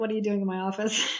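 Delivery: deep growl like a grizzly bear. Retelling walking unannounced into his office, imitating him growling. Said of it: "I can hear him growling".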